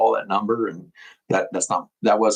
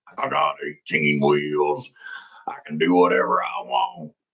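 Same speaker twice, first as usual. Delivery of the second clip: put-on deep trucker character voice, swooping; 5 semitones lower than usual. Talking to video viewers, the speaker performs their trucker voice. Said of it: "my trucker voice".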